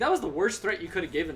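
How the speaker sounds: normal talking voice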